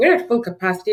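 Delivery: ordinary delivery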